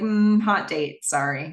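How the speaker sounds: normal talking voice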